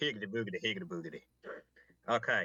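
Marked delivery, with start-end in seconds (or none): 0.0-1.2 put-on Southern accent with a drawl. Starting the recap of last session in a Southern accent. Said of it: "Southern accent".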